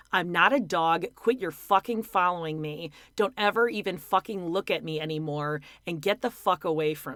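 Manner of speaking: plain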